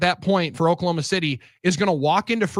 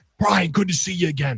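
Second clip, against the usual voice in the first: calm, easy, happy and pleased tone. Retelling how a broadcaster greets others at the Final Four: P J Carlissimo impression. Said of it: "You hear that voice".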